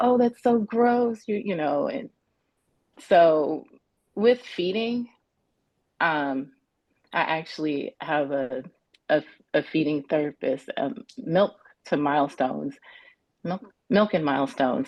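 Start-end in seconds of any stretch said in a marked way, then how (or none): 0.0-1.2 high, slow, mocking taunting tone. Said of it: "there was taunting".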